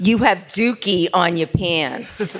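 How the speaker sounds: New York accent and dialect. Asked to say a favorite movie line in dialect, saying it in New York dialect. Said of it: "Say it in dialect".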